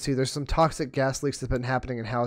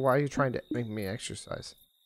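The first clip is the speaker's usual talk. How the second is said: offended, affronted, indignant tone; 6 dB quieter than usual. Guessing how the other character will answer: imitating someone offended. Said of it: "she'll be offended and be like".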